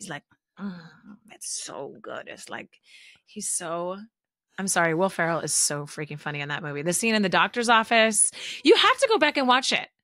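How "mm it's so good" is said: soft, whispered, mock savoring, very delighted. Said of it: "Jerry always loves to mimic that".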